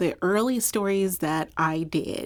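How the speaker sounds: plain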